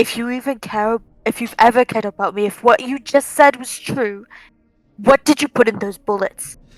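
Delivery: quiet, soft whisper. Voicing a character grabbing a captive's collar: whispering into his ear. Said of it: "kind of whisper into his ear".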